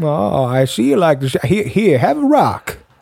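put-on old-timer prospector character voice. Playing a prospector in a scene, answering a stranger: old prospector voice. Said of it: "I'm going to play prospector".

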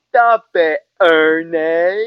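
very loud, high yell, name stretched long. Retelling what she always said to Ernie, imitating Lee. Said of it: "He would make me impersonate her".

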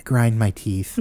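put-on soft childlike voice. Retelling what a man said in the back seat, very soft childlike voice. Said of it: "Just very soft and, you know, like a child".

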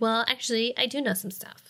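sassy, grating voice. Retelling a TV scene, acting out Dawn's line: Dawn impression. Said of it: "That was a pretty good Dawn impression".

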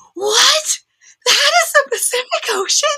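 put-on very high, overjoyed, amazed screaming kid voice. Retelling a kid on the beach seeing the ocean; imitating an excited screaming kid. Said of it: "he's so excited, screaming".

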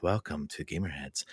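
deep, soft murmur in a radio-host voice. Co-hosts discuss voices; one welcomes listeners to Gamerheads in an NPR radio voice. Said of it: "the NPR voice".

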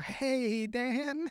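very high, sheepish, nervous and embarrassed. Retelling a movie scene, imitating a caught character: nervous, embarrassed greeting. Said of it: "nervous, like, that, that embarrassed".

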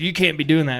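acted-out yelling in a scolding tone. Retelling how a camp host would yell at boaters: imitating someone yelling. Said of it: "yelling at us".

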